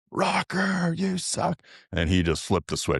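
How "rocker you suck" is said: acted-out piercing, very high shrill scream. Telling how a fan interrupted a calm conversation, imitating a fan screaming. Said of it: "a fan comes over and screams".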